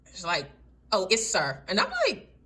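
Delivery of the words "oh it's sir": mock perturbed, put-out, snippy tone with attitude. Retelling a girl's reply correcting "ma'am" to "sir": imitating someone with attitude. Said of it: "she had a little attitude with it".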